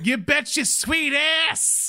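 put-on heavy New Jersey accent, very high, drawn-out. Quoting a character's catchphrase: heavy New Jersey accent. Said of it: "heavy New Jersey accent".

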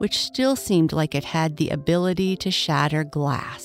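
plain

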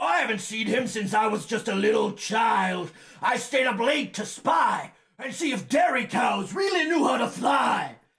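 gravelly, shouting voice. Voicing Lars, a character in a tabletop game, gravelly Lars voice. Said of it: "And he says, / It's not supposed to be quite so gravelly".

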